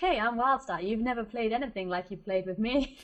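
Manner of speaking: cheesy, corny, self-selling delivery. Playing wildstar on a dating site after being asked: cheesy dating-profile pitch. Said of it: "it's gonna be so cheesy".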